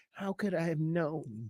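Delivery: gentle, very soft, quiet hush. Mimicking how a man suddenly talks after going after people: imitating his nice, quiet voice. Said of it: "he's using this nice, quiet voice".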